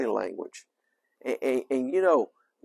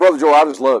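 very loud, sarcastic, syrupy fake gushing affection; 11 dB louder than usual. Contrasting sincere and insincere ways of saying i love you: sarcastic. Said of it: "The second one, I'm being sarcastic".

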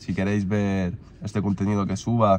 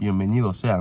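ordinary talk, nothing marked

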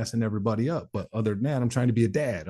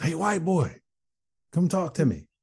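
high-pitched yelling; 6 semitones higher than usual. In the hole, a guy across the hall calls to him; retelling a man's yell. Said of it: "he yells".

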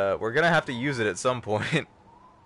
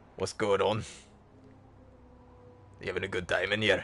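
put-on Scottish accent, butler voice; 5 semitones lower, 5 dB quieter than usual. Switching accents while playing, a speaker greets someone in a scottish butler accent. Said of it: "Scottish butler".

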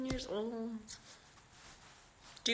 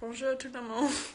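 French Canadian accent, slightly louder. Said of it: "your accent is so cute".

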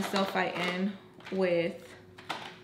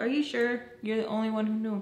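normal talking voice

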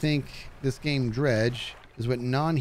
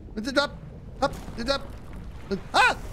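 panicking, scared, much higher pitch; 12 semitones higher than usual. Streamer playing a game as an enemy closes in, panicking. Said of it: "I'm panicking".

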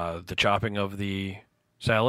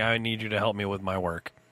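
ordinary talk

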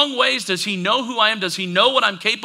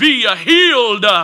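silly, dramatic, loud, really funny voice; 6 dB louder than usual. Retelling someone praying over you and waving a hand, in a really funny voice. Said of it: "say in a really funny voice".

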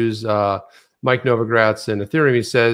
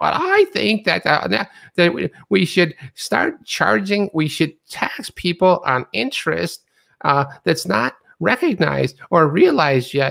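put-on crazy old lady voice, much higher; 7 semitones higher than usual. Retelling what a woman said, mimicking her in a crazy old lady voice. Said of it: "she sounds like that crazy old lady".

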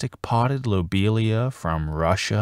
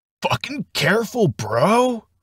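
very high, jittery, nervous, stretched "bro"; 12 semitones higher than usual. The narrator's houseplant warns the narrator opening a box with a knife: nervous. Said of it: "his oblong leaves bristling nervously".

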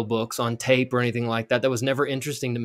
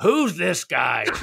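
grouchy, creaky, rough grumbling voice; 4 semitones higher than usual. A show host voices an imagined listener reacting to him: David Letterman-style grouchy viewer. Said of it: "your impression of David Letterman's impression of a grouchy viewer".

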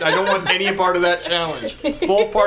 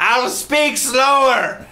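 put-on high, stooped old lady character voice; 6 semitones higher than usual. In a role-playing game, an old woman answering the party, in an old lady voice. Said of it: "full old lady hunchback situation's going on".

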